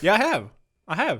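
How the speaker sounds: insistent, defensive, protesting tone. Insisting to the other speaker who doubts the word, defensive. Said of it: "you got really defensive".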